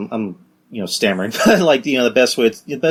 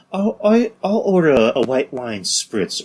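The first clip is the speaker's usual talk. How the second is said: put-on polite voice, much slower; 2 semitones higher than usual. Showing how differently he talks from what you expect, order a drink in a Keith Lee impression. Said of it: "is that your ordering restaurant voice?".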